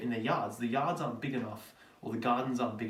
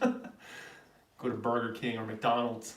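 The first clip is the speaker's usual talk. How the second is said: fake American accent, spoken very slowly. Australian speaker attempting an american accent again, put-on american accent. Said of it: "I think this one's maybe a little bit better".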